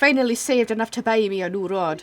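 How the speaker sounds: so-so, half-baked put-on Irish accent. Playing a fisherman back from a month on the seas: Irish accent. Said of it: "That is not my best Irish accent".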